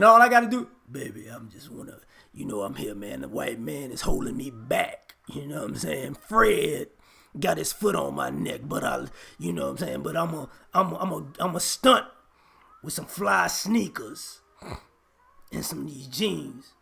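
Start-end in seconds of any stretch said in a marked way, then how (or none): 0.9-16.6 put-on, very deep, raspy murmur. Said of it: "If I start talking with a deep, raspy voice".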